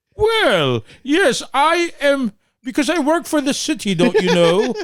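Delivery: put-on British accent, pitched very high. Voicing pliers named Lewis, answering the question: British voice for Lewis. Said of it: "He's semi-British".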